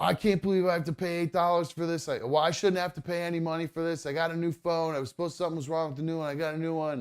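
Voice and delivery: acted-out yelling. Retelling a customer berating a store worker, retelling his yell. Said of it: "the guy starts yelling at the woman saying".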